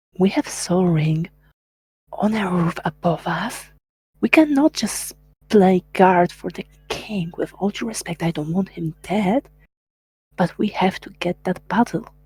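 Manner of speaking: half-whispered, hushed. Dumar turns away from the king and speaks to Nyx, half-whispering. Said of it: "and whisper".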